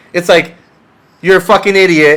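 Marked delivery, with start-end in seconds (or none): 1.2-2.2 mock yelling, higher and louder. Imitating a coach yelling at a competitor: imitating a coach yelling. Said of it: "it's not the yelling that you wanna hear".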